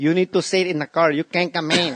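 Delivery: put-on Mexican accent. Retelling a friend's impression of the house's nanny: mexican nanny impression. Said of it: "I can't do an impression that good".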